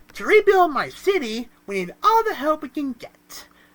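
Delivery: high put-on cartoon voice. Reading a cartoon character's quote aloud: SpongeBob voice. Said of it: "I'm gonna do it in his actual voice".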